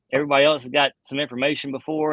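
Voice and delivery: ordinary talk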